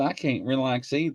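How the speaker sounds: ordinary talk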